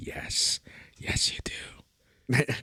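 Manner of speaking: creepy, slow, drawn-out whispered voice. Retelling his reply when she finally got it: creepy voice. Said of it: "I said it in that voice too. / very creepy".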